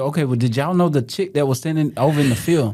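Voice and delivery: ordinary talk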